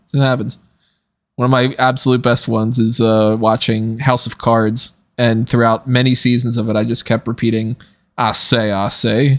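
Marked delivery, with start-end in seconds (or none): 8.1-9.4 very slow cartoon rooster voice, each word drawn out. Explaining a habit while watching House of Cards, Foghorn Leghorn voice. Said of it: "he's like Foghorn Leghorn. He's got that voice".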